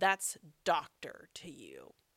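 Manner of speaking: put-on angry, indignant tone, low and swooping. Retelling how a man greeted as Mr. Bill snapped back, imitating an angry retort. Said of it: "this man angrily goes".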